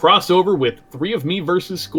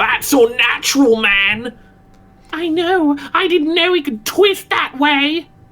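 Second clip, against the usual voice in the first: high, loud voice with strong Australian twang. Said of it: "I'll do Australian".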